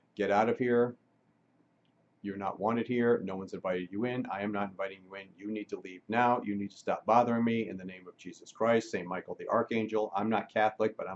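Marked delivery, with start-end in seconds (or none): none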